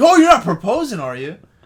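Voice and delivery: genuinely worried blurt. Quoting a movie character's line to a friend: imitating genuine worry. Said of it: "he's genuinely, like, worried about it".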